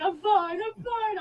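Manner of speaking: put-on very high, loud, drawn-out tearful bawling sobs. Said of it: "I'm crying, I'm bawling my eyes out".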